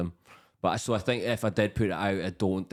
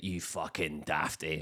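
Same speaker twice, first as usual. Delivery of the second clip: put-on soft, very broad, strong Scottish accent; 3 semitones lower, 6 dB quieter than usual. Retelling what a man said after he fell off a small stage, very strong Scottish accent. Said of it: "in the most Scottish accent ever".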